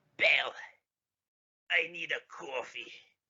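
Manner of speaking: put-on very slow, heavy New York accent, "coffee" drawn out. Joking that senators became Palpatine's interns: Palpatine voice with New York accent. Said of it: "Palpatine and Ben's accents say coffee like a fucking New Yorker".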